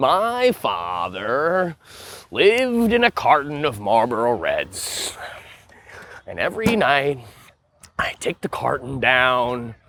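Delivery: put-on creepy clown villain voice. Joking with friends about Christopher Nolan films: Joker voice. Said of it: "Why are you doing a Joker voice?".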